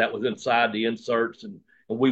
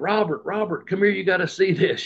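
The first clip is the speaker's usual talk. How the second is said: high-pitched calling yell; 8 semitones higher than usual. Retelling how a younger brother called him inside: imitating someone yelling. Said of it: "yelling at me".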